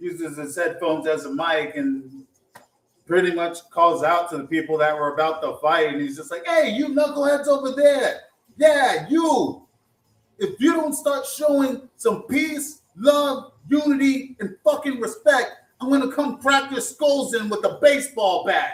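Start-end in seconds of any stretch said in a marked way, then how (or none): 6.5-18.7 wild, very high put-on New York accent. Retelling a man calling through his headphones to people about to fight, crazy New York accent. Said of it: "he has this crazy New York accent".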